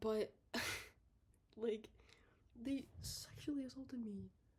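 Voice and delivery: soft, hushed whisper under the breath. A YouTuber talking to viewers, dropping to a whisper so the video stays up. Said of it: "I'm whispering that".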